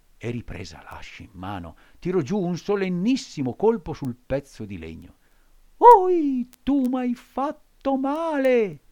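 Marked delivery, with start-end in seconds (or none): 5.8-8.7 shrill, very drawn-out, very loud plaintive wail. A tiny voice from the wood cries out as the axe strikes, plaintive cry. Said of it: "Gridò rammaricandosi la solita vocina".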